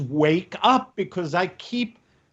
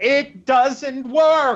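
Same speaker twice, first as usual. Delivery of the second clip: raised, higher-pitched voice; 5 semitones higher than usual. Making a point in a group discussion, raised voice. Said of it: "this is why I'm raising my voice".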